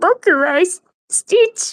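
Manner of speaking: put-on high-pitched old man character voice. Retelling a performer talking to people in the audience in Japanese, old-man Stitch voice. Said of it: "He sounded like an old man, like speaking in his Stitch voice".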